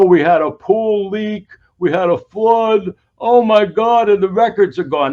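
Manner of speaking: loud, slow, put-on New York mobster drawl. Commentator acting out a supposed excuse for missing records, new york mobster impersonation. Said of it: "I'm doing this sort of New York mobster impersonation".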